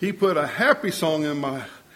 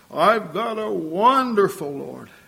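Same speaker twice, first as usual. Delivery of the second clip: put-on heartfelt, full-hearted, slow, fervent delivery; 4 semitones higher than usual. Recalling a man who really put himself into his words; retelling a fervent declaration. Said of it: "he really put himself into it".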